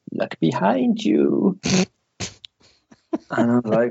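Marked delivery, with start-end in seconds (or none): 0.1-1.5 put-on high, creaky, creepy old woman voice. Retelling a voice heard in a dream, in a creepy old woman voice. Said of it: "really creepy old woman's voice going".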